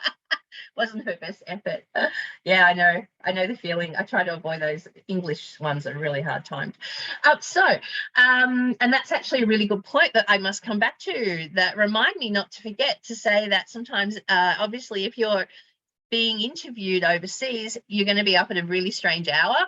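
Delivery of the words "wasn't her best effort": quiet laughter in voice. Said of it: "I'm laughing here".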